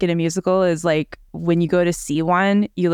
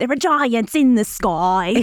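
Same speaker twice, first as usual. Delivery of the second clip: put-on thick, overdone British accent; 4 semitones higher than usual. Mocking how stage actors play Jack: Jack's atrocious English accent. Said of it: "Jack always has the most atrocious English accent".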